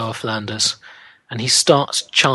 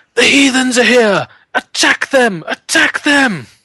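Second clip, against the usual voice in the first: very high, loud yelling cry, shouting; 12 semitones higher, 7 dB louder than usual. A game master voicing a one-eyed man who spots strangers, shouting. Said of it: "And he also shouts something".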